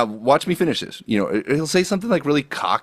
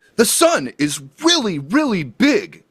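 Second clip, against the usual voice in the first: over-emphatic shouting, heavy stress hammered on "really"; 7 semitones higher than usual. Complaining about a man who overstates obvious points, imitating him: mock over-emphatic stress. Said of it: "stress it hard".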